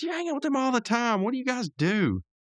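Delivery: very high-pitched, pleading voice.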